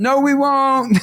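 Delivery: play-acted high, defiant little girl's yell. Retelling a daughter talking back to the coach: imitating a child yelling. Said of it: "She yells".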